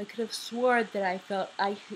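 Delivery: speech broken partway by a yawn. Reading a story aloud, the speaker yawns through the line. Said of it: "Sorry, I'm yawning".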